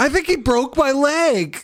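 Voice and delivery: very high, theatrical, fake pained wail. A player faking an injury during a match, dramatic fake injury. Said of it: "in dramatic tones".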